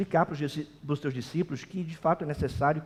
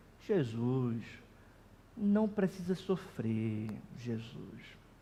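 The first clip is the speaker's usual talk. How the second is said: put-on pious, pitying tone; 4 semitones lower, 8 dB quieter than usual. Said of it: "Veja o tom de piedade".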